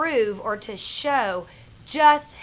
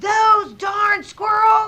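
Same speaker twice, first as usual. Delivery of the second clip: very high, shrill, loud shouting; 10 semitones higher, 8 dB louder than usual. Reader shows how a character's line from a story should sound, yelling. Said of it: "He yelled".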